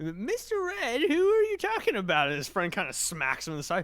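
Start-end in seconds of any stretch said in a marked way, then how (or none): 0.0-2.3 very high-pitched, animated, swooping character voice. One of two characters speaks up in common, higher-pitched character voice. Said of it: "the one with the more higher pitched voice, he says in common".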